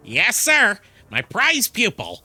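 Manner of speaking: loud, high, slow, drawn-out character voice. Reading a game character's reply aloud: Papyrus-like voice. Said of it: "almost mimicking the Undertale character Papyrus".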